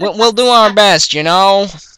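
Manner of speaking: bad Texan accent drifting into New York. Trying a Texan accent for a character role: attempted Texan accent, sounds New York. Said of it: "That's that sounds more like New York accent".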